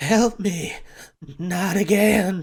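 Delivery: slow, gurgling, burbling, strange voice. Voicing a fleeing creature that burbles out a plea: burbling strange voice. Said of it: "in a voice that you haven't heard that says".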